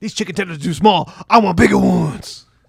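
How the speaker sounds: very loud, high-pitched wrestler bellow, blasting. Joking about a wrestler at Cracker Barrel: Scott Steiner impression. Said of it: "my Scott Steiner impres-, impersonation, top tier".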